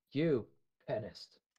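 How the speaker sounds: disappointed, let-down, judgmental, reproachful parental tone. Showing how to say the word as a very disappointed parent: disappointed parent tone. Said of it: "as a very disappointed parent".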